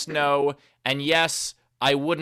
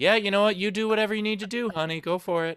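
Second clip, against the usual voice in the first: put-on sarcastic tone; 5 semitones higher than usual. Acting out her reply to a 'honey, I'm going to' announcement, mock-sarcastic retelling. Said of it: "Hear the sarcasm in her voice".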